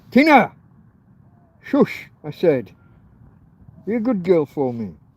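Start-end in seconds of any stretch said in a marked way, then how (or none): 0.1-2.7 grumpy, loud, high-pitched scolding shout. Telling the dog tina to stop barking at a car, shouting. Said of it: "Sorry, folks, I'm shouting".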